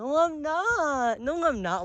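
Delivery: soft, high-pitched whine, each not stretched. Retelling answering people who joked it was laced, retelling in a whiny voice. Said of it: "I was kind of using like a very whiny voice".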